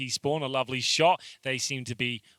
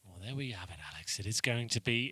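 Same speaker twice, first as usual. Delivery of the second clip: grave nature documentary narrator voice with gravitas; 3 semitones lower, 9 dB quieter than usual. Game commentator closing the round to his co-commentator in a nature documentary voice. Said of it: "that's like a nature documentary voice you've got there".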